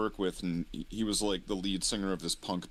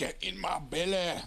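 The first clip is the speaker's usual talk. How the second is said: very high-pitched, drawn-out, dragged voice; 10 semitones higher than usual. Quoting a friend's impression: Fat Bastard impression. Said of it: "doing her best fat bastard impression".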